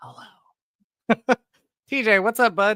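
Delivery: put-on ASMR-style talk, very high. Starting a new joke bit, greeting the other speaker in a mock asmr voice. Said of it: "It's our own version of A S M R".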